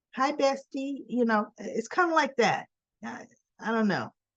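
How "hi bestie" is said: put-on young teenage voice, about fourteen. Mimicking a woman whose voice seems unnatural, imitating a voice sounding fourteen. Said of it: "I'm trying to sound like I'm fourteen".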